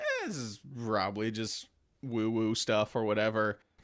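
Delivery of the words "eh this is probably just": usual speaking voice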